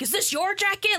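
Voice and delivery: mock, really mean, scolding tone, high pitch. Retelling how he grabbed the kid leaving the house, imitating a mean tone. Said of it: "really meanly".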